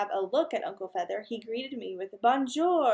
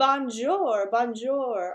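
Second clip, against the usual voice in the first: talking mynah bird voice; 4 dB louder than usual. Narrator reads the mynah bird's repeated greeting, Uncle Feather bird voice. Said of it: "in a bird voice".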